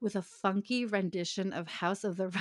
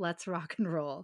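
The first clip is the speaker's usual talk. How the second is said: plain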